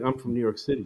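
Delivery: ordinary delivery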